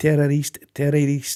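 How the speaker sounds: ordinary talk, nothing marked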